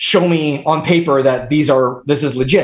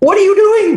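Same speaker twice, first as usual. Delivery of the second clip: put-on yelling, higher and louder; 4 dB louder than usual. Retelling a rant about devices left unused: retelling own screaming. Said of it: "here's me screaming".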